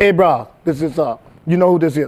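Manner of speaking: put-on big, thick, laid-on Hawaiian accent. Retelling a producer calling him on his phone, in a big Hawaiian accent. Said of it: "he's a big Hawaiian accent".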